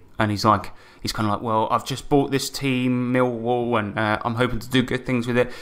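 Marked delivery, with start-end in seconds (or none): none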